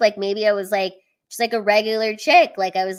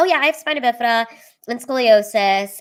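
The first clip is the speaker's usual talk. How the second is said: mock casual, offhand, breezy, confident tone; 2 semitones higher than usual. Showing how they tell you guys about their condition, acting out casual confidence. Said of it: "confidently like how I tell you guys".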